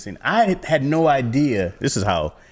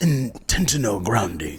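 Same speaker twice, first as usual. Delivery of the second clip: put-on Japanese accent, breathy voice. Imitating a japanese man calling a foul, put-on japanese accent. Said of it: "I did just do a Japanese dude calling a foul".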